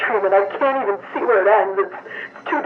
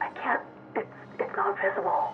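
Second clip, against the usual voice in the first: hushed whisper, quieter; 12 dB quieter than usual. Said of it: "Why are you whispering?".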